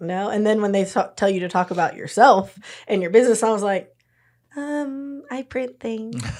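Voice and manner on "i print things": very soft, very slow, hushed, drawn-out little mouse voice. Recalling introducing their business to a group, in a little mouse voice. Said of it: "little mouse voice".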